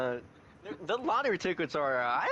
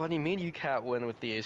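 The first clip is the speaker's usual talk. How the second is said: normal talking voice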